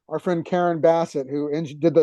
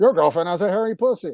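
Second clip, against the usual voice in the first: robotic, machine-like voice; 2 semitones higher than usual. Retelling what her speech machine would say on his visits, in a robot voice. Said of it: "the machine in a robot voice".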